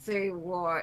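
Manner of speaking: spoken through gritted, clenched teeth. Asked by a friend if he can just say it, she replies through gritted teeth. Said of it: "She says with gritted teeth".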